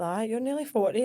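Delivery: ordinary delivery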